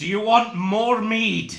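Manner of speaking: very loud, high yell in put-on character voice. A player in a role-playing game speaks in Giant, yelling in character. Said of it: "I'm gonna yell".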